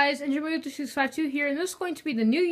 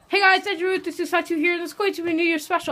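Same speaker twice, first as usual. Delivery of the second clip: very fast, rushed, words tumbling out; 3 semitones higher than usual. Opening a New Year special video, the speaker greets viewers talking really fast. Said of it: "I know I'm talking really fast".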